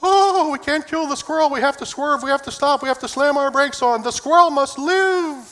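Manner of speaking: put-on fretting woman's voice. Joking about drivers and squirrels on the road, impersonating a woman. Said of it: "That's my best women impersonation I can do".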